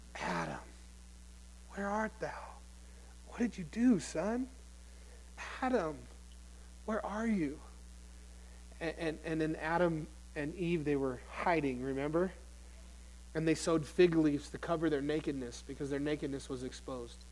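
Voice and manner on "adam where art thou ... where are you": hushed, broken-hearted voice, near whisper. Speaker voicing God calling for Adam in the garden, as a heartbroken father. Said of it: "The broken heart of a father".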